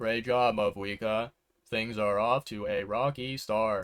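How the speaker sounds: dead, lifeless, flat bored monotone, very slow. Imitating how the english voice actress read the line: imitating a flat, monotone, bored read. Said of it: "all flat, all monotone, all bored".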